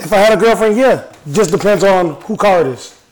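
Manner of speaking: very loud shouted yell. Asked about a road trip with a girlfriend, the speaker answers, yelling. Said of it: "Why are you yelling?".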